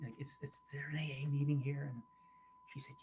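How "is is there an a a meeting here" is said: whispered. Retelling asking a stranger outside a church about a meeting: retelling a whisper. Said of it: "I whispered to her".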